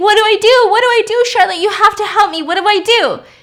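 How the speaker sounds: mock screaming at a very high pitch. Retelling a movie scene where a character screams for help: imitating Lizzie screaming. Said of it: "Lizzie's screaming".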